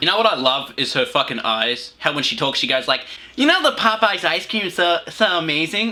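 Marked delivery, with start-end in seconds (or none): 3.4-5.9 annoying, obnoxious, pitched-up put-on voice. Speaker mocking how a woman talks, imitating an obnoxious voice. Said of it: "has this really obnoxious voice".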